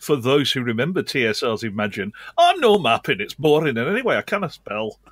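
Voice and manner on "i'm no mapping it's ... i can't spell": put-on Welsh-ish lilting accent through the line. Quoting the famous dwarf line from TSR's Imagine, in a Welsh-sounding put-on accent. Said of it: "That was a lovely Welsh accent".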